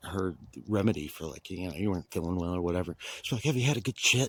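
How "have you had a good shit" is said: mock saucy, tipsy grandmother voice, higher. Retelling a grandmother's advice after too much wine: imitating saucy tipsy grandma. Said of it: "she'd get a little too saucy".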